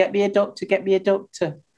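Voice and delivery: ordinary delivery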